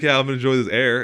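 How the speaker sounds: loud, mock sarcastic, cutting put-on tone. Retelling a student's reply to a lunch greeting: imitating a sarcastic roast. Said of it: "she roasted me".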